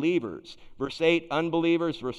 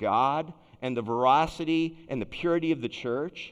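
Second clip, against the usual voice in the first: ordinary talk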